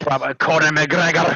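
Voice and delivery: put-on Scottish accent. Discussing favorite fighters, joking in a fake Scottish-sounding accent. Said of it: "That's like more Scottish".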